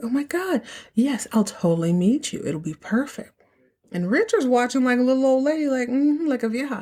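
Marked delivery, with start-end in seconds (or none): 0.0-3.3 play-acted cheerful, bright, glowing happy tone. Retelling a call with a first love: imitating someone smiling while talking. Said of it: "she's all smiling".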